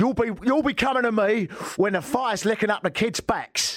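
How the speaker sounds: put-on threatening Cockney accent. Asked what accent Bricktop has, speaker demonstrates: threatening Cockney Bricktop voice. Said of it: "Slightly Cockney and threatening".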